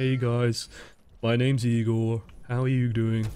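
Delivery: deeply glum, gloomy, mopey, downcast delivery. Showing how a naturally mopey voice sounds when talking, mopey voice. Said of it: "if you got a really naturally mopey voice".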